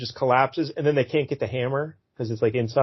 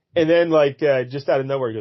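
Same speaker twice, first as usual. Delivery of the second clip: usual speaking voice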